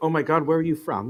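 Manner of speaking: usual speaking voice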